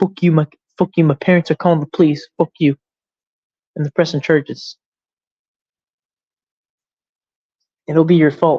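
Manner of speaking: put-on ranting voice that sounds like a little kid. Retelling what another person said, imitating them sounding like a kid. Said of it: "he literally sounded like a kid".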